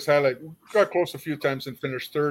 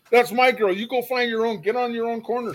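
put-on high-pitched, aggressive territorial yell; 9 semitones higher, 3 dB louder than usual. Retelling what a pimp yelled on a street corner: imitating a pimp yelling. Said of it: "her pimp yells at him".

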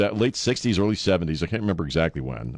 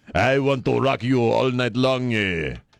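terrible, botched put-on French accent; 2 semitones higher than usual. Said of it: "the worst French accent I've ever done".

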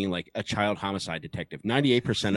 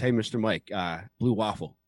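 ordinary talk, nothing marked

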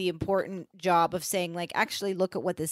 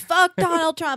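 re-enacted scream, much higher; 11 semitones higher, 9 dB louder than usual. Recounting what they screamed out loud today: retelling a scream. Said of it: "I screamed".

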